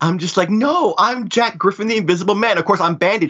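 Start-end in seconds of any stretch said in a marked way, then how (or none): 0.5-2.6 high, outraged, indignant, insistent tone. Retelling a costume contest naming the wrong costume: imitating an indignant protest. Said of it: "And I'm so indignant".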